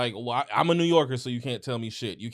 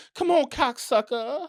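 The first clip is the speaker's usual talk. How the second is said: put-on prissy, taunting New York accent, pitched very high; 12 semitones higher, 3 dB louder than usual. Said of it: "even the way he talks shit".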